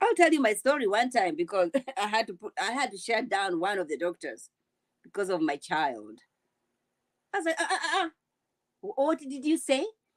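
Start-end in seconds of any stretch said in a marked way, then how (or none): 7.6-9.8 put-on Kenyan accent. Speaker retelling confronting their child's doctor, just off a flight from Kenya: heavy Kenyan accent. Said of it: "With my heavy accent".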